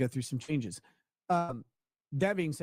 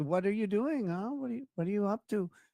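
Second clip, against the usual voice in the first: high, put-on Colombian accent; 7 semitones higher than usual. Man retelling a chat with a woman who asked where he's from: imitating her accent. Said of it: "you could tell like her accent".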